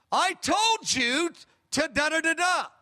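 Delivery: play-acted slow scolding tone. Retelling coming home during the day, imitating Diane raising her voice. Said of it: "She raised her voice in that tone".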